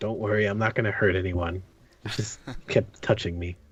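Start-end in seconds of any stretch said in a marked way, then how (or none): 0.0-1.6 soft, hushed tone under the breath. Retelling what he said while being watched, in a hushed tone. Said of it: "in a hushed tone".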